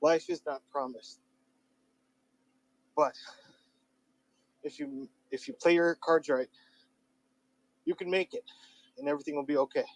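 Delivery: winded, out of breath, breathing hard. Talking to listeners after walking up a hill, out of breath. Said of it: "sorry I'm breathing hard".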